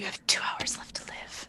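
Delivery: very quiet, breathy whisper, close to the ear. Playing a character leaning down to a wounded orc: whispering. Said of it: "I lean down and I whisper".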